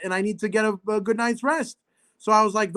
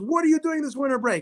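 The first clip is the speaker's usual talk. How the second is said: mock eager, all-excited, high and rushed; 5 semitones higher than usual. Retelling a man running over with a clipboard: retelling excited question. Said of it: "runs over to me with all the excitement".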